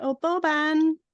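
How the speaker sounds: high thrown voice, sounding distant and calling. Calling out a name in the game with a thrown voice: calling out a name. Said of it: "can I call out with my thrown voice".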